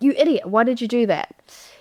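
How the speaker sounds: put-on mild, toned-down scolding yell. Retelling how a wife publicly scolded her husband: retelling a loud yell. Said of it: "she said really loudly".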